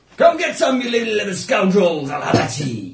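very loud, rowdy, swooping pirate yell. Player taunting enemies during a combat round, in a pirate voice. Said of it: "You sound like a pirate".

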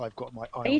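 quiet, private mutter under the breath. Following the suspicious nun in character, muttering under breath. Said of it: "muttering under my breath".

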